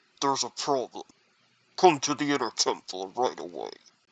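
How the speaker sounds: very deep, disguised voice-changer voice. Acting out a summons to the inner temple in a story: voice-changer disguised voice. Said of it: "I'll do the voice changer voice".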